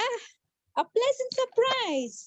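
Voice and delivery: happy, excited, high, drawn-out delighted surprise. Teaching a student to deliver a dialogue line, in a happy, excited tone. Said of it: "you are happy to see her or excited to see her, so your ta- tone should be different".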